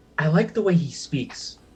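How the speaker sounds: hushed, quiet whispered aside. Whispering in character to Louise about another character: whispering. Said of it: "I'm gonna whisper to Louise".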